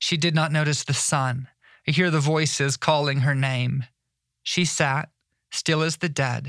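plain

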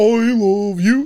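dopey, slow-witted cartoon dinosaur voice. Remembering how Barney talked, doing the Barney voice. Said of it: "He talks like this".

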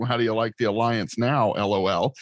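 ordinary talk, nothing marked

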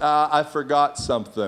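sheepish, abashed, hesitant voice. Retelling what the wife said about flat cinnamon buns: imitating a sheepish voice. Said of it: "sheepish kind of voice".

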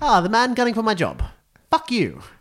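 very high, animated, swinging, swooping sing-song voice. Imagining what the friend will say next time: Elliot impression. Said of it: "a better Elliot impression".

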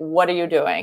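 put-on scolding tone. Retelling what you say to a partner when you can't hold back: retelling own blunt correction. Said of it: "sometimes I say".

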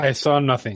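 flattest possible, low, dead-flat monotone. Asked by the group what she saw, Halisstra answers, flattest tone. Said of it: "and just with the flattest tone".

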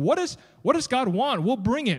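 mock defiant, sarcastic sing-song voice. Acting out the people asking what God wants: imitating sarcastic, defiant people. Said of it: "do you hear a little bit of the sarcasm?".

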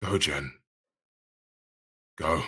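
hushed voice. Urging Jen to go while in character: quiet tone. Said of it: "in a very kind of, like, again, quiet tone".

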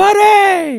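full-throated, shrill, loud scream pitched very high. Recalling a character from the movie Heavyweights, Hans screaming 'Buddy!'. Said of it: "just screaming".

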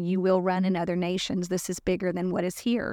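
plain

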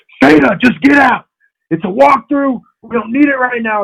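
very high, shrill, put-on screaming coach voice. Retelling a coach yelling at a player during a walkthrough: imitating Ed Warner screaming. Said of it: "Ed Warner screaming".

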